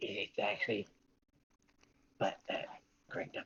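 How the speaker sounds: hushed whisper. Playing a character in a tabletop game, turning to her, whispering. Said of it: "he kind of whispers to her".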